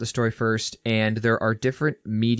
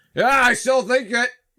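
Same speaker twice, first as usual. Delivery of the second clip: put-on very high-pitched, loud, tipsy drunk uncle voice; 14 semitones higher, 6 dB louder than usual. Chatting with a friend about hockey players, imitating a drunk uncle. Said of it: "pause for the drunk uncle who's just be like".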